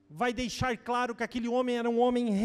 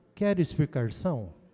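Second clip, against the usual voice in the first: sweet, gentle, very deep voice; 9 semitones lower than usual. A speaker quotes Jesus asking a question, in Jesus's sweet gentle voice. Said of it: "com a voz doce e suave".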